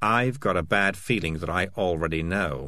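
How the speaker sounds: ordinary delivery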